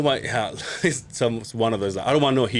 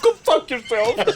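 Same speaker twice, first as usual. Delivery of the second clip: mock-angry outburst, much higher, louder; 12 semitones higher, 3 dB louder than usual. Retelling how a man turned on his daughter and swore: mock-angry outburst. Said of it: "he's all pissed off".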